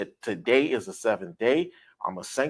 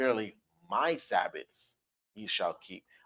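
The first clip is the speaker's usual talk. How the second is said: emphasis laid on "my Sabbaths"; 9 dB quieter than usual. Reading a scripture verse aloud, stress on "my sabbaths". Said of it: "I put emphasis where it says "my Sabbaths"".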